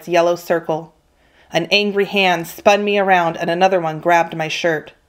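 plain reading voice

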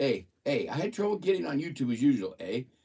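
Minnesota accent with "a" tagged on. Reading a text aloud after being told to try a minnesota accent. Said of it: "Like Minnesota accents".

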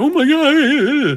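over-the-top, very high voice, god drawn out. Describing an actor's plan at a table read; Cringer voice. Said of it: "the traditional cringer voice, where he's very kind of like".

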